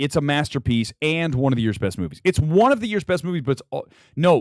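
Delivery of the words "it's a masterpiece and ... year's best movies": ordinary talk, nothing marked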